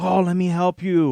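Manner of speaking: high, loud, wimpy groveling voice. Complaining about a cartoon, the speaker mocks Purple Megatron's voice. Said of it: "Purple Megatron comes over and is like".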